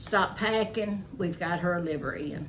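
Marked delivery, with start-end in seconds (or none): none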